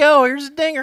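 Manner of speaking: very high, very loud put-on country twang. Imitating a film actor's added lines in the opening scene, countrying it up. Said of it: "countrying it up".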